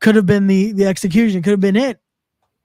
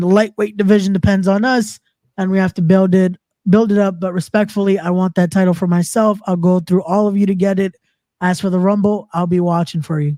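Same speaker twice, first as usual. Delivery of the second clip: normal talking voice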